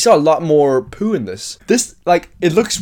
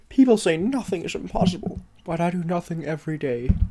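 put-on cartoon bear voice, quieter; 8 dB quieter than usual. Quoting a line from the film in an impression: Winnie the Pooh voice. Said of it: "That's my Pooh".

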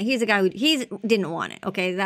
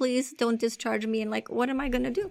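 weeping, tearful crying voice with a pleading tone; 3 semitones higher, 5 dB quieter than usual. Retelling what patients say when sent out: imitating someone crying. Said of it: "they're, like, crying".

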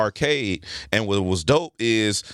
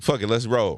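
ordinary delivery

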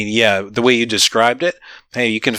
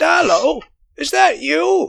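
put-on very high, crackly, creaky old-woman crone call. A game master voicing someone heard from below the floor, in an old woman's voice. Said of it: "It sounds sort of like an old woman's voice".

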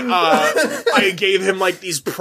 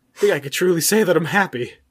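acted, emotional, getting choked up mid-line. Acting out a celebrity's speech at one's own funeral: imitating Samuel Jackson choked up. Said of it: "gets choked up".

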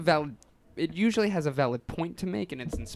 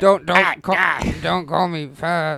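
put-on cartoon kid voice, louder; 8 dB louder than usual. Doing a Cartman impression while talking about imitating him: Eric Cartman voice. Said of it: "you guys are doing it".

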